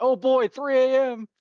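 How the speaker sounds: very high, squeaky, loud, drawn-out cartoon voice. Recalling a reaction to an alarm clock shot: SpongeBob voice. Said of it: "SpongeBob quotes stuck in my head".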